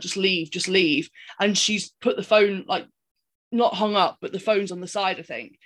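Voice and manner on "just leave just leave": imploring, urgent, begging voice. Retelling a film scene where a caller begs her to leave: imitating someone begging. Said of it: "he's begging her at this point".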